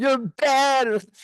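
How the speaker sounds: mock aggrieved, stretched tone. Retelling what upset passengers on a slowed cruise said: imitating upset passengers. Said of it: "a lot of people on the cruise who were really upset".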